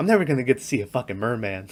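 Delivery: soft, mournful, defeated sad lament. Retelling a movie scene, quoting a disappointed character: imitating someone sad. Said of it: "he was so sad about not seeing".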